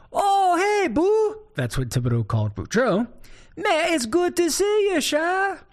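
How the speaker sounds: put-on high-pitched hollering voice in a Cajun accent. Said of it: "So Thibodeau hollers back".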